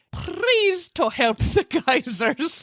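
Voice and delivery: put-on Scottish brogue. Playing with accents in conversation, a line in a put-on Scottish accent. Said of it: "That's Scottish, right?".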